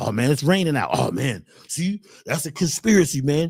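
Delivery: low, grumbling, whiny complainer voice.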